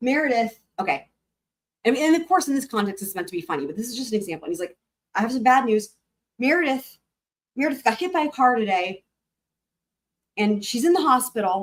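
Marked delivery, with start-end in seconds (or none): 5.1-11.6 mock choked-up, tearful, serious delivery. Retelling how a man announced bad news to the guys: imitating someone tearing up. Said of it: "he's doing it like tearing up".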